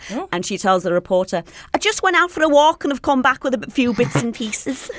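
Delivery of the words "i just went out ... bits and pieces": put-on high-pitched Liverpool Scouse accent, pitched up. Quoting what she told a reporter, doing a Rooney impression in Scouse accent. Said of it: "Just in that voice".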